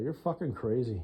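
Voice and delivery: muttering under breath. Retelling what she said under her voice: imitating someone muttering under her breath. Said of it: "she said under her voice".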